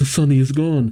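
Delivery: ordinary delivery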